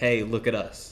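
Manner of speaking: ordinary talk, nothing marked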